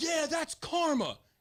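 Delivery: put-on yelling. Retelling a coach yelling at the girls on the field: imitating a coach yelling. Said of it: "starts yelling".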